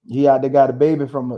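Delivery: ordinary delivery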